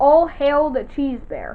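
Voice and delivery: ordinary talk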